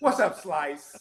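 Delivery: put-on loud Boston accent.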